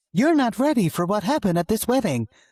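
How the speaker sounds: short-video hook delivery. Co-host says to deliver it in that typical reel hook voice: Instagram reel hook voice. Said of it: "You got to say it in that voice".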